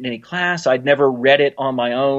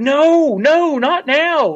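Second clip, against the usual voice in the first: acted, put-on scream, much higher pitched; 13 semitones higher than usual. Retelling an emotional episode scene as Picard is pulled away: imitating Picard screaming. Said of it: "he's screaming like".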